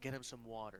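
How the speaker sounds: whispered speech. A player, in character, speaks to a half-elf woman, whispering. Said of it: "and I whisper to her".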